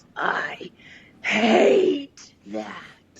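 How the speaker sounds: loud, high, swooping snarling villain voice. The game master voices a villain at the start of combat, snarling. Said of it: "He snarls".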